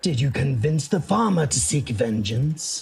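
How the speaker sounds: whispering voice. Voicing an unseen figure whispering into a player's ear: whispering voice. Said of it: "you hear his voice whispering into your ear".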